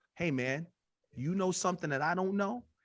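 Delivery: put-on completely earnest, dead serious, no joking. Retelling how Isaac pulled the speaker aside: imitating Isaac, dead serious. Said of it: "he was dead serious".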